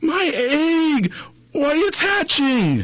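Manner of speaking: very high yell with egg stretched out. Horton, as his egg begins to hatch, shouting. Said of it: "shouted Horton".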